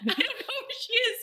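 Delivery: high, stubborn, insistent, repeated protest. Retelling how a character keeps denying it: imitating someone insisting. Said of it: "just keeps insisting".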